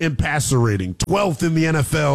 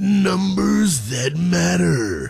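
big movie trailer voiceover announcer voice; 2 semitones higher than usual. Sports show host repeating the segment name, doing a big voice guy impersonation. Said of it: "That was my big voice guy impersonation".

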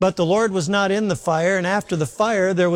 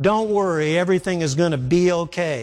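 ordinary delivery

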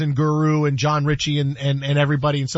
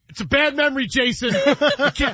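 high, stung voice through a laugh. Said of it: "and he just goes".

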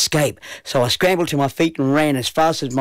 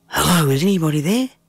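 hushed whisper, higher pitch; 3 semitones higher than usual. Johnny, sitting up in bed after hearing a voice call his name: whispering. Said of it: "I whispered".

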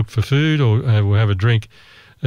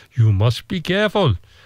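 put-on Indonesian accent with raised pitch; 5 semitones higher than usual. Retelling a guide's warning near a Komodo dragon: imitating an Indonesian accent. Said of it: "my Indonesian accent's very good".

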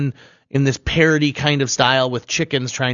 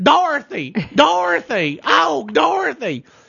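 very high, drawn-out, sing-song, swooping chicken voice; 13 semitones higher than usual. Describing a movie's talking chicken, doing Billina the chicken's voice. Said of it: "the chicken talks like this".

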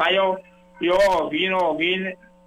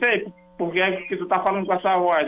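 ordinary talk

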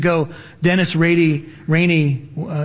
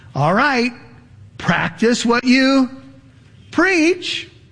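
high, slow, pointed challenging tone. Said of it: "Sometimes people will say to us".

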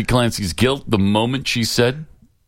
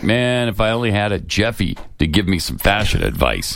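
ordinary delivery

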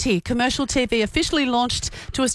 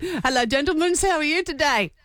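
Australian accent with Greek flavor; 4 semitones higher than usual. Trying the impression again after being told it missed, Con the Fruiterer accent. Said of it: "Let me try again".

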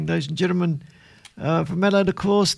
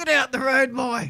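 rude, pitched-up character voice; 6 semitones higher than usual. In a radio skit after the weather update, the Major speaks: as the Major. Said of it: "there's no need to talk like that, Major".

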